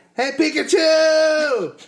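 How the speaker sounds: put-on slow, high-pitched toddler shouting. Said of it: "started talking to the movie and be like".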